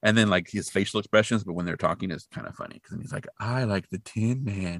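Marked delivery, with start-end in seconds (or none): 3.4-4.8 put-on very slow, drawn-out, creepy child voice. Retelling a kid's line from a movie scene: imitating a super creepy kid. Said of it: "he's super creepy".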